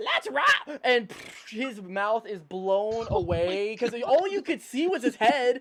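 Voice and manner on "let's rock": goblin character voice, pitched very high. Voicing a goblin who shouts a line before being shot: voicing the goblin. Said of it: "you hear".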